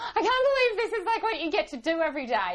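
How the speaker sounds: put-on excited childlike voice, high, fast, laughing.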